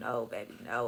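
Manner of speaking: tearful crying voice, words pushed out through tears. Retelling a police raid, hugging a partner: imitating own crying. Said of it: "I'm just crying like".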